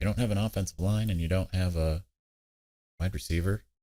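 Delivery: low, hushed half-whisper. Speaker drops into an aside mid-discussion, half-whispering. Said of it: "I'm whispering".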